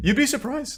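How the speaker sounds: voice breaking hard, sharp high crack mid-phrase. Replying to a remark during a discussion of the law, with a hard voice crack. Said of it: "That was a hard voice crack".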